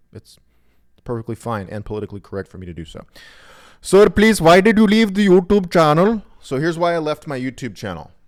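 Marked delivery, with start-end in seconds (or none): 3.8-6.2 put-on very high, very loud, shrill, comic Indian accent. Speaker announces doing a comic bit, then delivers a line in a put-on Indian accent. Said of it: "I'm gonna do these in Indian accents because it makes it more funny".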